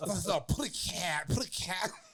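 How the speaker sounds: very slow, drawn-out boxer-style voice. Doing an impression for the others: Mike Tyson impression. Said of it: "that sounds just like Tyson".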